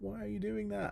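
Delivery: high-pitched mock shouting.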